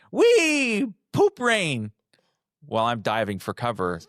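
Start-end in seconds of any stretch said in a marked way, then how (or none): 0.2-2.0 mock squealing child's yell, very high, "wee" stretched. Retelling the baby's cry as the mess flies: imitating a child screaming. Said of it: "Liam screaming".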